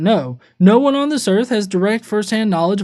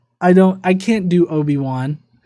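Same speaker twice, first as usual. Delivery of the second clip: usual speaking voice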